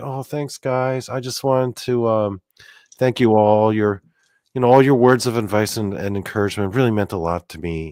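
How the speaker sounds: put-on gentle, sincere voice. Retelling a hidden video message to chat room followers: imitating the Riddler's gentle voice. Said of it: "he had, like, a really gentle voice".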